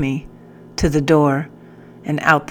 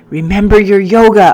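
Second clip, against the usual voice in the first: very loud, shrill, high cry; 5 semitones higher, 8 dB louder than usual. As a hysterical captain strikes the floor near his head; crying out. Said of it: "I cried out again".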